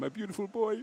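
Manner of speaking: high-pitched put-on South African accent. Recalling the swimmer's dad who became a phenomenon; Bert impression, South African accent. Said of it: "best South African accent you've got".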